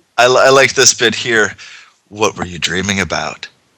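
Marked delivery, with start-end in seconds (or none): 2.1-3.5 low, throaty, husky voice, lower and quieter. Reading a character's question aloud from the story: low, throaty voice. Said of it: "Her voice was low, throaty, and intoxicating".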